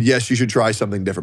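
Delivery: ordinary talk, nothing marked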